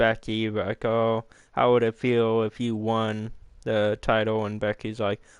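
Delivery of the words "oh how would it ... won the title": ordinary talk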